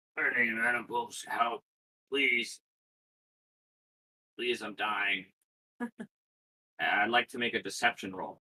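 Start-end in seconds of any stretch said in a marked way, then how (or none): 0.2-5.3 whimpering, pleading, slower. A player's character in a cell begs the guard close by for help, whimpering. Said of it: "say in like a whimpering voice".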